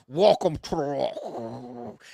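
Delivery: words drawn out, each one chewed. Doing an impression for a co-host, welcome line from the movie: Sean Connery impression. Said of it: "Here's my Sean Connery impression".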